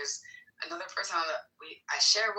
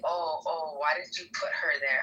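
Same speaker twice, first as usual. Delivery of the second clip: mocking, imitated manner of speaking. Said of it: "trying to say".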